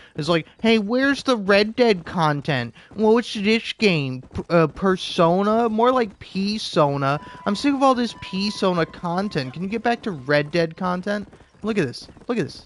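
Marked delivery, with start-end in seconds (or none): 0.7-11.3 high, irritating, annoying little chattering voice. Retelling what a viewer in the live stream said: mocking an annoying viewer. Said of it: "annoying little asshole come into my live stream".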